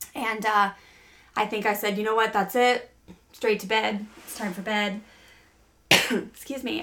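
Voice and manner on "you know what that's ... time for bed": usual speaking voice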